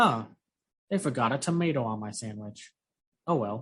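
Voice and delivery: casual, breezy, utterly unbothered tone. Imitating a character's awful remark in the movie: imitating a nonchalant tone. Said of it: "with the nonchalantness of just like".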